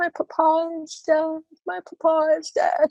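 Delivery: play-acted, high, slow weeping through the words. Retelling a story scene where Sarah Crewe finds out her father is dead: Sarah Crewe crying. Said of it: "she's crying".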